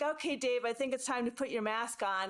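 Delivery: ordinary talk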